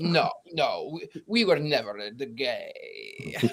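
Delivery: put-on speaking with Transylvanian accent. Retelling what someone said to the speaker, quoting them in a Transylvanian accent. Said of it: "With a Transylvanian accent".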